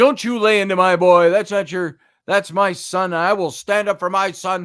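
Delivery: loud, put-on mock scream. Retelling how a mother barged in and screamed at you: imitating someone screaming. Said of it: "starts screaming at me for".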